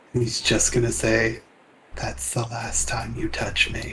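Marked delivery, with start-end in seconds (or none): 1.9-3.9 soft, barely voiced whisper. Player's character flies close to another character, whisper. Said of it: "he's gonna just whisper to Ava".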